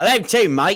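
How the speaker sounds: very loud, high, put-on Australian accent. A podcast host speaks to his co-host, slipping into an Australian accent. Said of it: "I did an Australian accent there".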